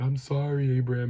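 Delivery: high, tearful voice choked with sobs. Retelling a boy's apology after he was hit: imitating someone sobbing.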